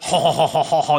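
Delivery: mock French-style laughing. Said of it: "it's like".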